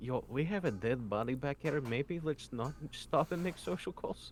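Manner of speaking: quiet, whispered aside. Speaking as Damien to Brent in the scene, whispered aside. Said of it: "Damien sort of like whispers to Brent".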